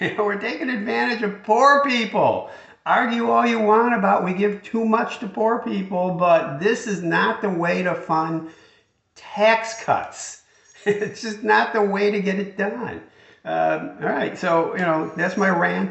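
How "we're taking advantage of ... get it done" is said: laughing through exasperation, pitched up. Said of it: "I'm just laughing out of frustration".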